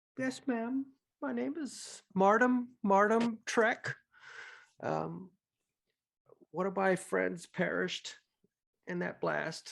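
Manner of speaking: put-on sorrowful boy voice. A storyteller voices a little boy answering a kneeling woman; sad young boy. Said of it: "and he is going to be sad".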